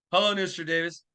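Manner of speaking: ordinary talk, nothing marked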